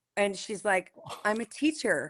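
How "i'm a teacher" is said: playful, flirtatious tone. Retelling a scene where he asks her job: retelling a flirty question. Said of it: "flirty. S-, flirty, though".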